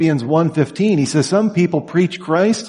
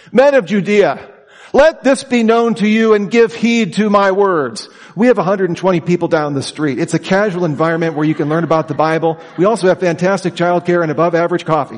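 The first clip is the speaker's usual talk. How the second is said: ordinary talk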